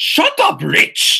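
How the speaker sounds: pretty poor fake British accent. Retelling a wrestler shouting at another wrestler: bad British accent as Neville. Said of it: "In his British accent".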